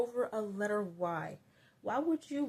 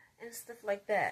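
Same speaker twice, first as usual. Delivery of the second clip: normal talking voice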